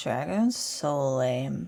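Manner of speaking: unimpressed, scoffing, dismissive, scornful tone. Rolling eyes at a dragon in character: eye-rolling dismissive. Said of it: "I'm gonna roll my eyes and say".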